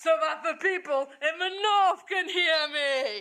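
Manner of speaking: loud, high-pitched shouting. Playing General Haig in an interview sketch, answering the reporter: shouting. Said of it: "why are you shouting?".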